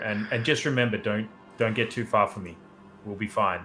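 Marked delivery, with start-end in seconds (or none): none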